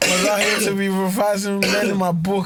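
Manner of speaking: high, laughing, mocking teen voice.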